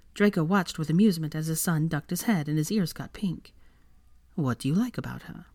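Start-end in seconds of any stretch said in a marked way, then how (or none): 4.3-5.3 curious, inquisitive tone. A father asks his son what he likes about a woman, curious. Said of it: "Draco asked in curiosity".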